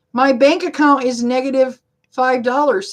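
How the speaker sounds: ordinary delivery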